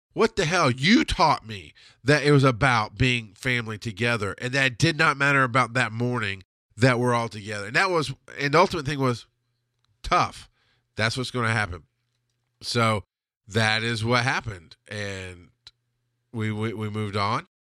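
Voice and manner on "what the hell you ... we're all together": ordinary talk, nothing marked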